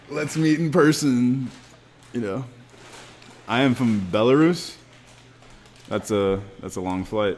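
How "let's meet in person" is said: put-on angry, raged-out young person's ranting voice. Mocking a raged-out young person who wants to meet: mocking a raged-out young person. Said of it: "I'm just kinda mocking the raged out, like, young person".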